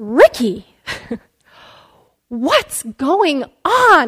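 very slow, fed-up, exasperated tone. Retelling stopping the line and turning to ask ricky, mock-exasperated question. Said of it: "I'm just exasperated at this point".

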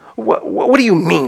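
severe. A caterpillar questions a girl after her confused answer, sternly. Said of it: "said the caterpillar sternly".

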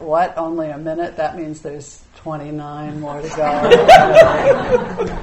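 mock dismayed, complaining tone.

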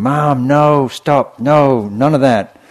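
very loud, high, stretched-out yelling. Retelling a cartoon where Satan yells at his mother: imitating someone shouting. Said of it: "he's shouting".

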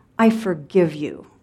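mock venomous childlike voice. A mother retells how her three-year-old said it, mimicking a child's venomous tone. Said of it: "with the venom in her tiny voice".

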